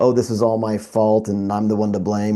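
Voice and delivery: ordinary talk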